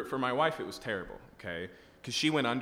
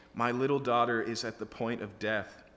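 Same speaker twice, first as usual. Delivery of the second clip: usual speaking voice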